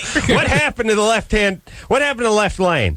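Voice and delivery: very high-pitched rant. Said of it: "traffic rant".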